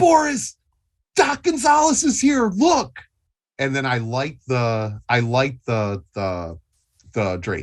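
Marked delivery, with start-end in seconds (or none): 0.0-3.0 very high, acted, calling-out yell. Playing a character who yells out to Boris in a scene: yelling in character. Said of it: "I yell out for Boris".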